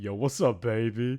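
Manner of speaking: very low, bass-heavy, super deep voice. Imitating a cat character's English voice actor: imitating a super deep voice.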